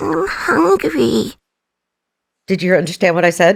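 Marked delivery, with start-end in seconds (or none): 0.0-1.3 put-on high, creaky cute toy voice, rough edge. Doing a shy cute voice into the speaker: Labubu voice. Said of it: "it's my Labubu voice".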